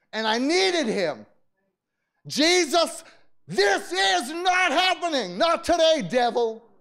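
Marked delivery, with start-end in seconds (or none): 2.2-6.5 all-out raised, high-pitched shout. Speaker retelling crying out to jesus while in pain, reenacting own shouting. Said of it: "And I'm shouting just like I'm shouting right here".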